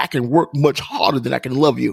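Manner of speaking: plain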